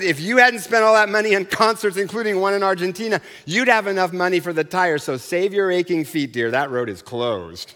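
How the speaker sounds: usual speaking voice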